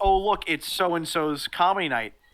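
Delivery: ordinary delivery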